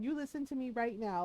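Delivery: mock steady, kind, insistent, firm but gentle. Retelling a man who grabbed the speaker's shoulders: retelling a firm but gentle order. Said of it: "he said it very firmly but gently".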